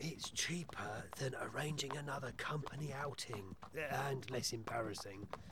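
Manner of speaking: soft, hushed whisper. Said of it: "What are we whispering about?".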